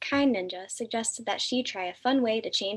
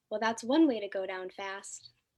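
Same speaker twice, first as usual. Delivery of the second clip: plain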